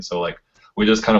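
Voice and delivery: ordinary talk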